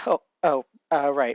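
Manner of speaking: plain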